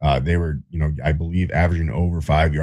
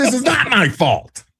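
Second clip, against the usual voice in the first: mock very high, pissed-off voice; 4 dB louder than usual. Retelling a missed third-down throw: imitating Aaron Rodgers getting pissed. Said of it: "getting all pissed".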